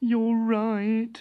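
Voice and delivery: with a sigh. Narrator reads the inventor's reply; sighing. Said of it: "sighed the inventor".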